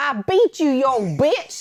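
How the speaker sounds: put-on country accent. Speaker quotes a woman's favorite line from a horror movie; quoting in a country accent. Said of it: "accent comes out there too".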